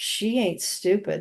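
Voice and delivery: sly stage whisper meant to carry. Retelling what a kid in class said: imitating a stage whisper. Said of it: "he said in a stage whisper".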